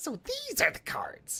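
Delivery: very high-pitched, squeaky nerdy voice. Retrying a line after deciding his voice is higher, high-pitched Weevil voice. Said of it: "His voice is way higher pitched".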